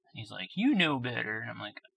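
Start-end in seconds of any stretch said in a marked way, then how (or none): 0.6-1.4 put-on irritated, angry scolding tone in a man's voice. Retelling how an angry worker scolded the speaker: imitating an angry man. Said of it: "he's all mad at me".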